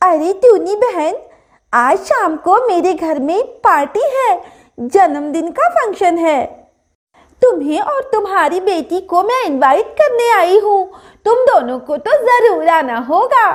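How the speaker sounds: cheerful, welcoming tone. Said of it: "इतने में [name] चिड़िया की सहेली [name] चिड़िया आ जाती है और कहती है, / इतने में [name] चिड़िया की सहेली [name] चिड़िया आ जाती है और कहती है".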